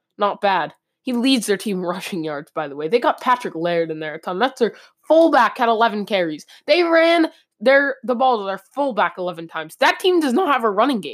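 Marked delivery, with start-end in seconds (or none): 9.8-11.1 pitch breaking, voice cracking mid-line. Breaking down a team's rushing stats, the speaker's voice cracks. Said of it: "Sorry for the voice crack".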